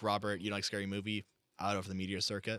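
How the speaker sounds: normal talking voice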